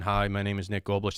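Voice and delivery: level, flat, one-note monotone delivery. Showing how not to introduce yourself to an audience: flat monotone. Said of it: "You don't want to be monotone".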